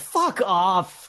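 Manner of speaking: half-hearted call, tossed out, pitched high. A character yells out through the wall: yelling. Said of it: "I yell out through the wall".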